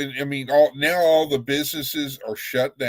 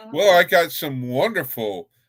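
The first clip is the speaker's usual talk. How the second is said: ironic, sarcastic, opposite-meaning delivery. Announcing some news about the city's situation: sarcastic. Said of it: "I'm being sarcastic".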